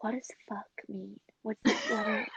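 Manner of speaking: whispered. Retelling asking a brother about a bad word at breakfast: imitating own whisper as a child. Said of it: "very, very whispering it".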